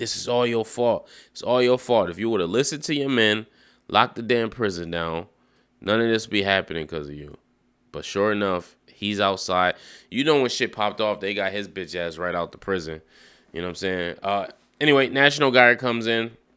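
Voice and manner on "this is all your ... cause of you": plain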